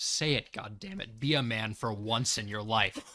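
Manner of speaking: low, deep, muttered aside. Voicing Mason muttering so only Constance can hear: muttering under his breath. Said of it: "He's going to mutter".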